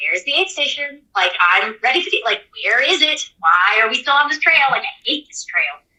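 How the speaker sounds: fed-up, irritated, grumpy grumbling, put-on. Recalling hunting for the next aid station on a trail, acting out past irritation. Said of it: "I found myself getting like I was like".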